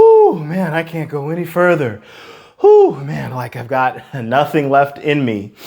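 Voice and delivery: pretend panting, out of breath. Showing how exhausted someone sounds after a vocal exercise: pretend panting, out of breath. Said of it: "I'm talking panting out of breath".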